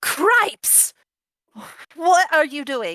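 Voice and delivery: sudden, piercing, high, loud startled shriek. Game narrator voices a woman who just threw a dagger at a player's character, screaming. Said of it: "and screams".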